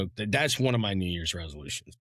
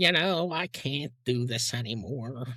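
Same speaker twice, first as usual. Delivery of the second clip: complaining voice; 4 semitones higher than usual. Imitating a parent complaining about aching legs: imitating a parent complaining. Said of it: "my dad complain about how his legs hurt".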